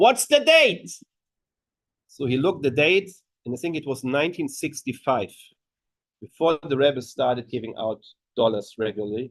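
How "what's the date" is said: high, loud scream. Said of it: "he screams".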